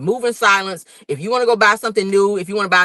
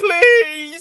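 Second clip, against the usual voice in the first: acted tearful begging, pitched way up; 10 semitones higher than usual. Retelling a reality-show scene, imitating someone crying and begging. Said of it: "Kawhi was crying in the video, like, begging him".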